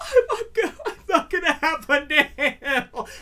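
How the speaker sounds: slow, weepy, distressed crying voice through tears. Retelling being stitched up as grandmother watched: imitating own past crying. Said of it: "and I'm crying".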